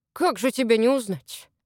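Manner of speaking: grumpy, grouchy muttering grumble. The house spirit confronts an uninvited icy guest, grumbling. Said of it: "проворчал домовой".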